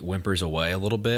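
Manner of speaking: plain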